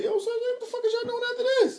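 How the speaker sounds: very high, aggressive, in-your-face delivery. Retelling own past approach to women at twenty-one: imitating own aggressive come-on. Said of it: "I was out there like".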